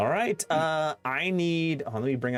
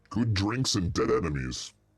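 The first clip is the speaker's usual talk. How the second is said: deep goblin voice, lower; 4 semitones lower than usual. Voicing the old goblin as he raises his glass, deep Glugs goblin voice. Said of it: "the deep voice and the not deep voice".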